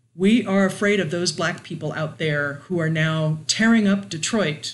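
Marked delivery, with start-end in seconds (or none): none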